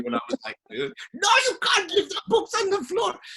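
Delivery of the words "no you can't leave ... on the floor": very high, loud shouting. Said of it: "my mum inculcated in me".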